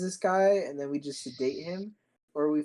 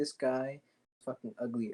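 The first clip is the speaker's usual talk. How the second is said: serious, hushed half-whisper; 3 semitones lower, 5 dB quieter than usual. Playing out a plan with the other speaker: re-enacting a serious half-whisper. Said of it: "Like I'm like whispering, like all serious".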